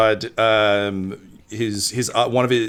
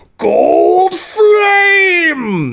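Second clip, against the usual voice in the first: screeching, shrill, booming, full-throated battle cry, "flame" stretched; 8 dB louder than usual. Narrating a game scene where the player's blade yells, a yelled battle cry. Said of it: "you just hear it yell".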